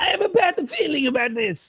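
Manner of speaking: going very high with an Italian sound. Doing the Phantom Menace script the way everyone does it, in Watto voice. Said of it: "I went to Italy there".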